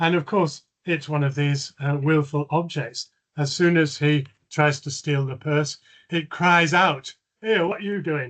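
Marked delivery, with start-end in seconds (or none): 7.4-8.3 put-on Cockney kind of accent. Retelling Bilbo's story, voicing a troll's purse that cries out, Cockney accent. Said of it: "in a Cockney kind of accent".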